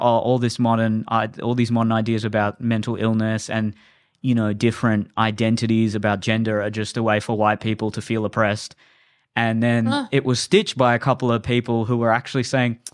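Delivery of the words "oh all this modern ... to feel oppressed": plain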